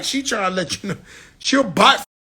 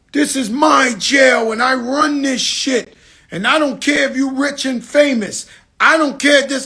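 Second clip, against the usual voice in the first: put-on screaming, ranting, scolding; 4 semitones higher than usual. Retelling how a woman at the jail screamed at the line: imitating someone screaming. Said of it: "So she starts screaming".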